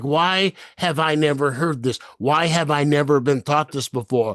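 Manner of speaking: ordinary talk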